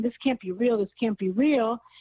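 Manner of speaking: ordinary talk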